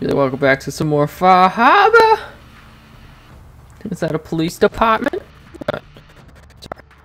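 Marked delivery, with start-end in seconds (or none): 0.2-2.2 put-on high, loud voice with Boston accent. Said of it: "I'm gonna be saying the hell out of 'em".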